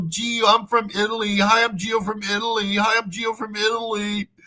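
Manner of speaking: looped, repetitive patter, same line repeated. Mocking a man at a college in Dumaguete: imitating Gio introducing himself. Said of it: "saying, you know".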